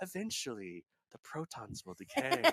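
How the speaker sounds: slow delivery with a smile in it. Imitating an astrophysicist describing the cosmos's end: Brian Cox impression, smiling voice. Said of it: "sounds like he has a smile on his face".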